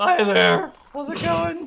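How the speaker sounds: very high, cracking, breaking adolescent voice. Quoting a well-dressed man's greeting in a pubescent cracking voice. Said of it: "he says in his pubescent broken voice".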